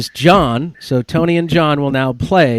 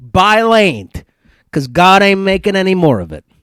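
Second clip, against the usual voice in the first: best-try put-on Italian accent; 4 semitones higher than usual. The speaker reads a quote for the others to guess: best Italian accent. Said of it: "use my best Italian accent".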